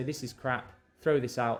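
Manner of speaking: ordinary talk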